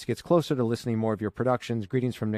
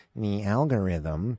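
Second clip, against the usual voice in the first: not very convincing put-on robot voice; 3 semitones lower than usual. Host asking listeners for ratings says the word as a robot impersonation. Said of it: "That was my impersonation of a robot".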